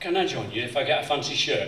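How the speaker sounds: ordinary delivery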